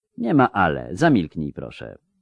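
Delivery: ordinary delivery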